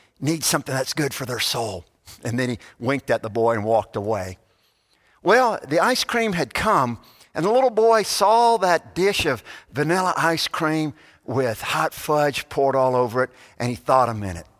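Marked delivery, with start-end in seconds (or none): 0.2-1.9 put-on whisper, lower and quieter. Retelling a story where an old man speaks to a boy: imitating a whisper. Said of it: "he kind of whispered".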